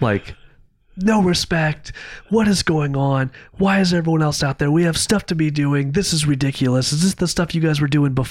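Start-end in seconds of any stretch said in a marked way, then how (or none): 1.0-8.1 high-pitched, angry, berating tone. Retelling how he sat everyone down on shop stools, retelling an angry berating. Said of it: "and just starts berating people".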